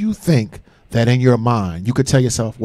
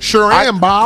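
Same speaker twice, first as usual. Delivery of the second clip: put-on voice with distinct cadence, pitched higher; 9 semitones higher, 4 dB louder than usual.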